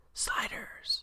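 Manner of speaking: dramatic, soft, breathy whisper.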